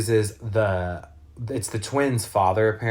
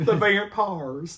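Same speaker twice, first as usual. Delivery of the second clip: thick, laid-on Southern drawl; 10 semitones higher than usual. Imitating a movie character saying one word: Terry Joe voice. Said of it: "I sounded like Terry Joe when I said that".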